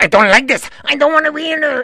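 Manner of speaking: very high-pitched, feisty, squeaky little voice. Retelling an old movie scene where Bogey slaps him: Peter Lorre impression. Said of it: "Peter Lorre ... and he goes".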